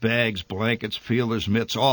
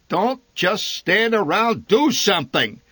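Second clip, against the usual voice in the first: very high, loud bellowing; 10 semitones higher, 5 dB louder than usual. Narrator reads a man staggering past with a box, addressing everyone within hearing: bellowing. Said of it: "he bellowed".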